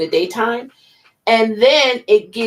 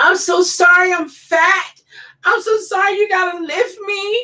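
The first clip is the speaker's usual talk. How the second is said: tearful, very high, slow, drawn-out sorry; 10 semitones higher than usual. Retelling apologizing to the nurses in shock trauma: retelling a tearful apology. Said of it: "I was crying".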